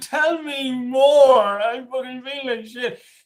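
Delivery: exaggerated dramatic delivery. Acting out a back-and-forth with one's own negative thoughts: comical, dramatic dialogue with own thoughts. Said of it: "I'm being sort of comical, I'm being a bit dramatic".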